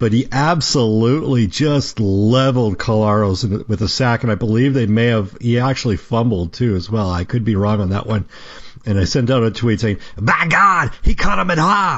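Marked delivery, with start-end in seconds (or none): 10.2-12.0 big, high, excited ringside announcer call. Retelling a sports tweet, calling a big sack: Jim Ross impression. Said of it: "I'd have to do my best Jim Ross impression".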